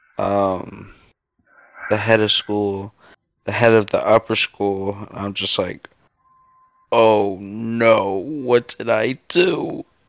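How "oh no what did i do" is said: very slow, weepy, "no" drawn out long. Recalling being called in before the school heads, the speaker acts out sounding sad. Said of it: "You sound like you were crying".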